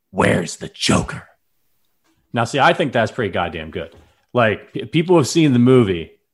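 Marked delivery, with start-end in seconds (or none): 0.2-1.3 rough, gravelly growl. Taking a turn in an impression contest for the listeners, in Batman voice. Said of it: "I think I sounded like Batman right there".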